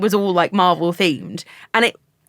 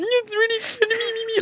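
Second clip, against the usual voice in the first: tearful, crying while talking, higher and quieter; 14 semitones higher, 4 dB quieter than usual. Retelling trying not to cry in front of everyone: imitating own tearful voice. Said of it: "crying behind you".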